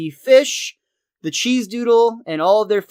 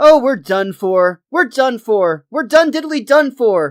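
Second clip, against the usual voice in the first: high, loud, frantic voice, losing control. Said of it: "where Ned starts to lose it".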